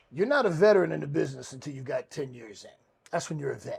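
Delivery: ordinary delivery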